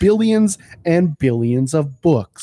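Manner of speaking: loud booming narration. Joking with another speaker, the speaker announces and does a Neil deGrasse Tyson impression. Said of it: "This is my Neil deGrasse Tyson impression".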